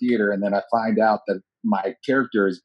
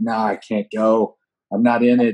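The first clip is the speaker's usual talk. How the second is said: embarrassed delivery; 3 dB louder than usual. Retelling skipping a cast party after being cut: retelling own embarrassed words. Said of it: "I was so embarrassed".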